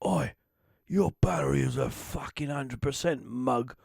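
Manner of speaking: put-on gruff growling voice, slow and rough. Imagining a battery message spoken in a Phil Mitchell voice. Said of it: "I'd love to be able to get like Phil Mitchell".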